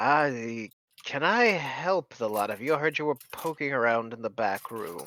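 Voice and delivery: hawk-like bird creature voice. Voicing a hawk person speaking into the party's heads: telepathic hawk-person voice. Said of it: "you hear a voice that says".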